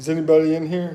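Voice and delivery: loud, high-pitched calling out.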